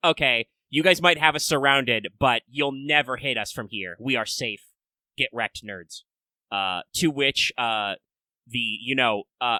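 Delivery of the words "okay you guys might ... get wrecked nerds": ordinary talk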